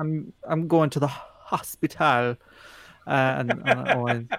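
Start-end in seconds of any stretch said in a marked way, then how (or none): 0.5-2.4 put-on Jamaican accent. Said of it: "if you wanna say something in a Jamaican accent".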